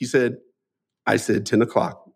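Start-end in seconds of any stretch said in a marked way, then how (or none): 1.1-1.9 cool, composed, calm and even delivery. Retelling an uncle's answer to a scolding aunt: imitating Uncle Bobby speaking calmly. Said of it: "and calmly".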